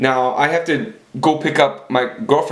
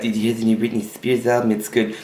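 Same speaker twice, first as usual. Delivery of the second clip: put-on young girl's voice; 3 semitones lower, 3 dB quieter than usual. Retelling what a girl said in the car: imitating Tanya. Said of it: "she talked just like that".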